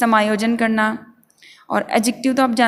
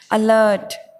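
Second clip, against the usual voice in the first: alert with stress on second syllable -lert. English vocabulary lesson in hindi, stress on second syllable of alert. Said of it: "मैं जोर देते हुए बोल रही हूँ, ल से जैसे मैं बोलूँगी जोर दे रही हूँ, स्ट्रेस दे रही हूँ".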